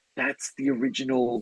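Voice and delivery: hushed, high-pitched half-whisper. Leaning over to their ten-year-old in a theater, the speaker retells what they said: half-whispering. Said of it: "as I was whispering".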